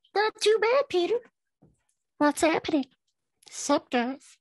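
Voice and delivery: very high, chipper character voice. The host greets Bucky, who answers him and the viewers; Bucky voice. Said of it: "That's my Bucky voice".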